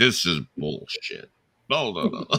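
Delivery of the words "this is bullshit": commanding delivery, total authority. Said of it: "it was with his voice, which is so, you know, commanding".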